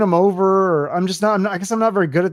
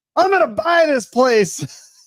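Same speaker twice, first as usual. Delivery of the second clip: put-on slow, pitched-up drunken yell; 8 semitones higher than usual. Retelling a man yelling at hotel staff: imitating a drunk man yelling. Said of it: "The guy is hammered and he's yelling at the hotel staff".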